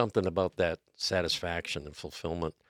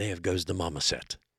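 breathless British nature narrator voice. Showing the British voice used for a golf commercial: David Attenborough voice. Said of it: "that breathless British quality about him".

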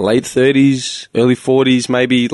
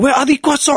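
mock furious meltdown, much higher pitch, faster; 14 semitones higher than usual. Retelling a woman at a cafeteria service window; imitating a woman losing it. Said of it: "she was losing it".

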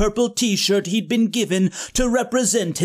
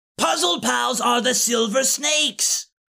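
full-voice yelling, screaming; 2 semitones higher than usual. In an audio drama argument between characters, screaming. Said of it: "Dark of Ka screamed".

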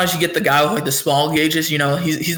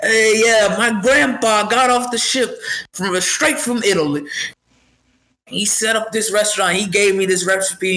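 friendly, chatty spiel, pitched up; 5 semitones higher than usual. Describing the pizza guy who comes up and talks: imitating a pizzeria guy. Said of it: "He'll be like".

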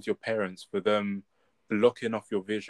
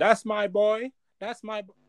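very high, drawn-out, proud cheering scream, acted out; 12 semitones higher than usual. Picturing parents at an awards moment, imitating screaming parents. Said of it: "clapping and screaming".

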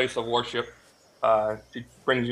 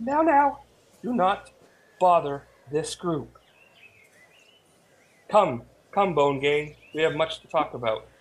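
elf woman voice, pitched up; 5 semitones higher than usual. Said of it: "this woman in her robes, elf".

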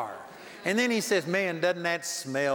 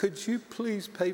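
mock-pitiful pleading tone; 2 semitones higher, 4 dB quieter than usual. Retelling how people come up to him asking for prayer, imitating a pitiful plea. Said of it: "they get pitiful".

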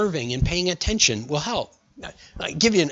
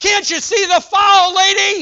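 mock yell, much higher, louder, slower; 8 dB louder than usual. Retelling how a man kept yelling at the lady making calls, imitating someone yelling. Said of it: "he's just yelling at her".

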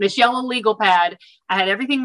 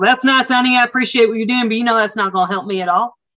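put-on speech in an Oklahoma accent. Retelling what a woman at a gas station said; imitating an Oklahoma accent. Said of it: "She's with her Oklahoma accent".

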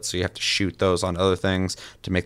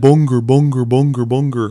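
put-on dumb creature voice, louder; 6 semitones higher, 9 dB louder than usual. Describing how the game's creatures say their names, doing a dumb Bunger voice. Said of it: "but in a really dumb way".

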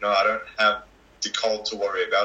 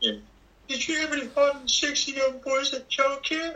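put-on old-man voice, much higher. Putting a question to the other speaker in a put-on voice: Herbert voice. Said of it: "the old man from Family Guy?".

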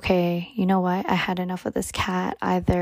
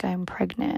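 put-on tearful crying voice, quieter; 4 dB quieter than usual. Retelling telling dad the news at dinner: retelling own crying confession.

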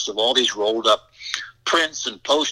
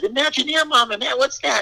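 excited, mock shouting, very high-pitched; 13 semitones higher than usual. Retelling calling out to mom after a TV program: imitating own past yell. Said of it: "And I yelled at my mom".

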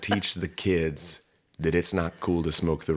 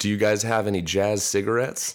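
put-on older adult voice faking casual teen cool; 3 semitones higher, 3 dB louder than usual. Retelling a TV scene, imitating Slater like an undercover cop. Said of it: "And he's like".

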